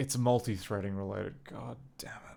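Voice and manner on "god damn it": crestfallen, let-down, disappointed tone. Realizing a bug is multi-threading related late in the evening: disappointed. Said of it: "I don't mean to sound so disappointed".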